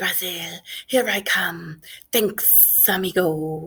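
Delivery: sibilant, hissing snake voice. Narrator reads an escaping snake's words as it slides past Harry, in a low, hissing snake voice. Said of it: "a low, hissing voice said".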